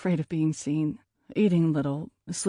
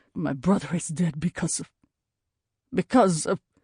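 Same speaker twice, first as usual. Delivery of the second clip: choking, words catching in throat. Alexandre cuts off a plea to let someone explain, choking on the words. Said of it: "He chokes on the words".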